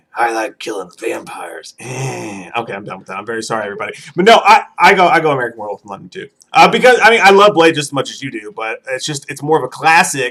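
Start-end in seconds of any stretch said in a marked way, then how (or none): 0.2-2.5 put-on low, soft, slow, strained grunting voice. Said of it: "You sound like Van Damme taking a dump".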